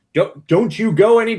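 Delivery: shrill, very loud, high stern yell. Game narrator voices Luella yelling after the kids up the path: Luella yelling sternly. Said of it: "being very like stern".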